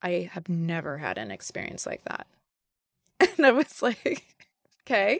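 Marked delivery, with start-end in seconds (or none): 0.0-2.3 put-on utterly deadpan, low, flat, giving nothing away. Speaker retelling how a man answered their question, retelling a deadpan reply. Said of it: "very like deadpan and looked back at me and was like".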